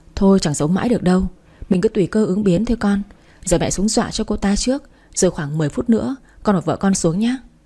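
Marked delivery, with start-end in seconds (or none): none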